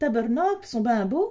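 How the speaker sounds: failed attempt at a put-on Canadian French accent. Speaker admits failing, then says the remark in a bad Canadian French accent. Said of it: "je sais pas si c'est ça l'accent".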